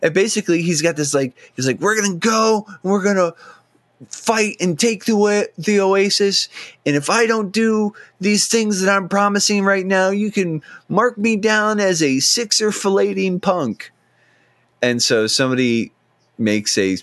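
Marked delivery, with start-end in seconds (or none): 1.8-13.9 mock heroic, very high, triumphant and rousing. Retelling Wade's William Wallace moment, mock triumphant Wade speech. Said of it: "huge sort of, like, triumphant".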